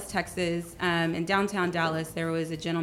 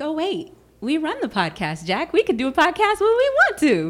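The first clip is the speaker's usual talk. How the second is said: sudden, high-pitched, loud burst of realization. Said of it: "And I was like".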